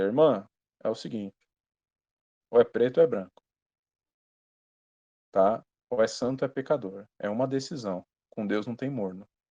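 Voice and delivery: serious, stern, deep, gruff heavy-voiced tone. Retelling what he told a church sister, retelling a more serious tone. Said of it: "Falei mais sério, falei mais grosso".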